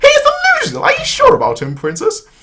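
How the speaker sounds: sarcastic, very high, squeaky squirrel voice. Speaking a character's line in a scene, in a little squirrel voice. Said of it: "I sound like a little squirrel".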